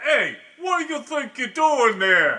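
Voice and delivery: put-on tough Brooklyn voice. Acting out a line-cutter confrontation in brooklyn: put-on brooklyn tough voice. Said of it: "now you're in Brooklyn".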